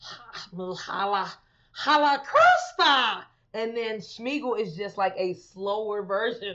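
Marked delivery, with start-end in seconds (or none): 0.0-3.2 animated, cartoonish, loud, wide-swinging, swooping character voice. Showing the difference between two cartoon voices: Stitch voice. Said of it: "Stitch is more like".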